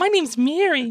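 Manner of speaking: comic puppet-like voice. Repeating the imitated greeting: Muppet-like voice. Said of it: "it's a little bit more Muppet".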